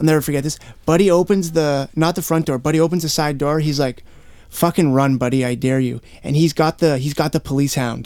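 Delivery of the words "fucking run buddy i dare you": put-on teasing, taunting tone. Retelling a cop holding a police dog and daring him to run: imitating a cop teasing. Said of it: "teasing me".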